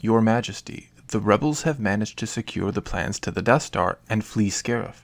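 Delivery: ordinary delivery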